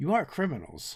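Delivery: voice kept down, secretive. Voicing a character who looks around and warns quietly: lowered voice. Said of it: "lowers her voice and hunches a little bit".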